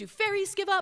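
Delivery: very high, tiny little cartoon character voice. Speaker retells a cartoon heard while doing laundry: little cartoon voice. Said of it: "this little cartoon voice say".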